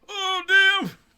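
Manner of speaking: put-on very high, very loud, shrill elderly outburst. Imagining older drivers reacting to a high-speed chase, imitating an old person. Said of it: "How many old fuckers do you think were like".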